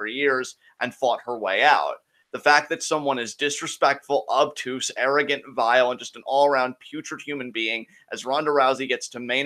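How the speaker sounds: ordinary talk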